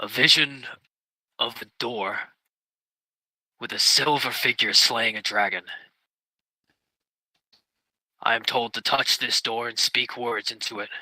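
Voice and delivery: soft, quiet, private murmur. Answering the angel in character so only he can hear: said quietly. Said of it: "I'm gonna say quietly, so only he can hear me".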